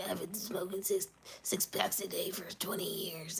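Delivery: put-on, electrolarynx-style artificial machine voice. Joking about ending up with a smoker's voice machine: imitating a voice machine. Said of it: "one of those voice machines".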